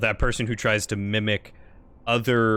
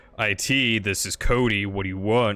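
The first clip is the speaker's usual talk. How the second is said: lower-pitched, unwelcoming, unfriendly voice, slower. Speaker demonstrates how an unwelcoming help desk greeting would sound, lower-pitched unwelcoming voice. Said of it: "than someone who's like".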